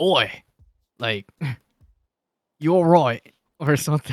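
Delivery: bad, rough, half-remembered Australian accent. Demonstrating the accent a penguin character has, in a bad Australian penguin accent. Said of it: "it's the accent that the penguin has".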